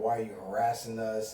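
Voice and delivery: ordinary talk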